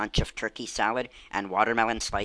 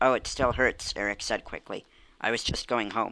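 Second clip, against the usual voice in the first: ordinary delivery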